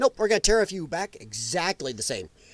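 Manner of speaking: ordinary delivery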